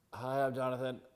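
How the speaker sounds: stiff, loud, awkward, tongue-tied delivery. Retelling meeting her at the gym: imitating an awkward self-introduction. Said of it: "Super fucking awkward and weird".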